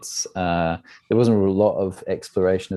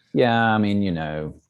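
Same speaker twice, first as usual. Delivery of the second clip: ordinary talk, nothing marked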